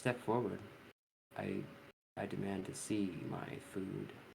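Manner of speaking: hushed, very quiet, menacing, sinister tone. Game narrator voicing an unseen figure calling from the room beyond: sinister voice. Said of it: "you hear this just this like sinister like voice".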